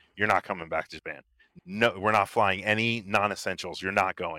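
usual speaking voice

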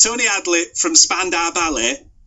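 poor Nottinghamshire accent attempt. Asked to say a band name in the correct accent, a bad Nottinghamshire attempt. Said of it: "I'm very bad at this".

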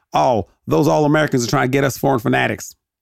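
put-on high-pitched Southern American accent, wrestling-promo announcer style. Retelling a promo about the All-Americans: Jim Cornette impression. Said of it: "He has a Southern accent".

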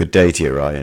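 unusually low voice. Greeting the other speaker on the podcast: very deep voice. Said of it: "you sound really, really deep today".

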